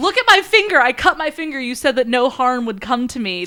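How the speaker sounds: high, loud, indignant protest.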